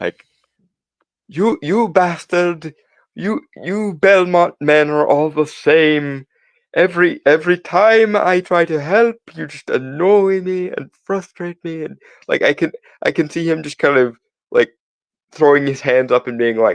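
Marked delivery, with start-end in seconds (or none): 1.3-11.8 high, drawn-out, exasperated, thoroughly fed-up tone. Imitating an exasperated character complaining about the Belmonts: bad impression of him. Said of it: "That was the worst impression ever".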